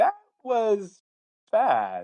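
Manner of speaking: acted, slightly skeptical, very high and swooping. A teacher acting out their reaction to essays back in twenty minutes, mock-skeptical. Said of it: "Like I'm a little skeptical".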